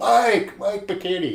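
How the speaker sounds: mock shouting, high and carrying. Retelling calling up to a contractor thirty feet up: retelling a yell. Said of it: "So now I'm yelling".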